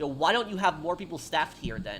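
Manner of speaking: normal talking voice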